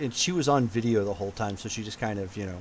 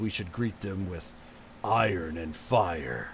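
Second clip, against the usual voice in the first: heavy, dropped, real deep put-on action-hero voice; 4 semitones lower than usual. Describing a scene, the speaker quotes what a man says in a real deep voice. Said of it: "he puts on a real deep voice and he says".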